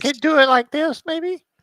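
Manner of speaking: very high-pitched voice. Told to change the voice and get high pitched, trying it: high-pitched voice. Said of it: "get a little bit high pitched".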